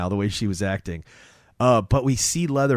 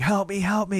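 mock, high-pitched, bloodied-sounding screaming; 9 semitones higher than usual. Retelling a movie scene where a woman runs bloodied: imitating someone screaming for help.

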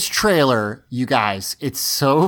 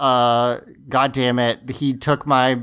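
plain

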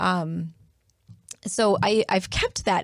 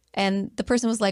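normal talking voice

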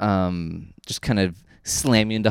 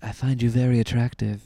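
put-on purring, strongly shifted English accent. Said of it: "me with my English accent".

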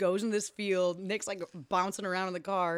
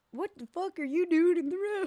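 very high, oddly hickish voice; 11 semitones higher than usual. Retelling a movie scene with a man in the road: Dennis Hopper impression. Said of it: "that was a good impression".

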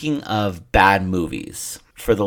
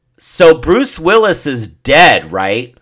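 put-on very loud, high old-lady voice, blurted; 7 semitones higher, 9 dB louder than usual. Telling about their grandmother during a quiet movie scene: imitating grandmother talking loudly. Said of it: "really loud during a quiet part of the movie".

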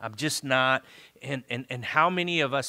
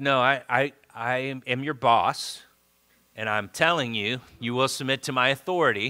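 plain

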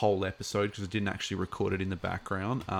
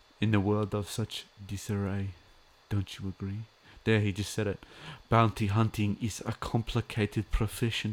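put-on German accent. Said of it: "The client, Werner Herzog".

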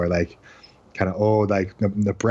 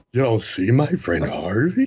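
put-on drunk voice; 3 semitones higher than usual. Imitating Jimmy Stewart's drunk character from the movie Harvey: Jimmy Stewart impression, drunk. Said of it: "he's like a drunk".

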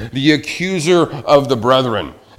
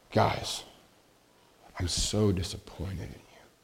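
soft, gentle, very quiet, hushed near-whisper; 6 semitones lower, 15 dB quieter than usual. Recalling a beloved flight commander addressing the group, retelling a quiet, gentle remark. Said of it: "he just said very quietly, very gently".

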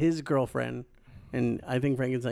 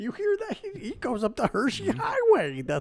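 put-on announcer voice, higher pitched; 14 semitones higher than usual. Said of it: "You sounded like you were just being Bob Keckner".

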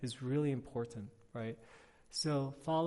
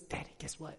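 put-on beaming, breathy little girl's whisper; 7 dB quieter than usual. Retelling how a daughter greets her father each morning: imitating a beaming child. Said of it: "she's beaming".

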